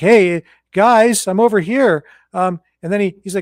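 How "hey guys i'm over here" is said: high-pitched, slow calling out. Retelling a video where the president is ignored: imitating Biden calling for attention. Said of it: "He's kinda like".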